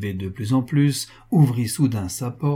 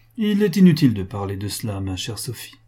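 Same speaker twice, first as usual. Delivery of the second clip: ordinary delivery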